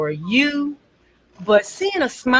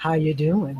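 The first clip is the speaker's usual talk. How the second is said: very low, deep, soft put-on radio announcer voice; 7 semitones lower, 5 dB quieter than usual. Greeting a listener who just said hello, showing off a radio voice. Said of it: "My radio voice".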